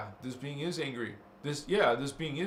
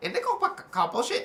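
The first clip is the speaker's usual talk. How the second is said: parrot voice, much higher and louder; 13 semitones higher, 3 dB louder than usual. Repeating a phrase for listeners in an animal voice: parrot voice. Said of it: "say it like in a parrot's voice".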